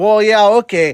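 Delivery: put-on shrill, loud, high-pitched Wisconsin accent. Repeating another speaker's words back to tease them, imitating a Wisconsin-sounding accent. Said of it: "that sounded like".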